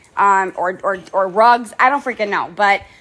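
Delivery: ordinary delivery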